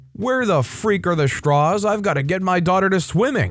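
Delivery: high, impatient, insistent tone.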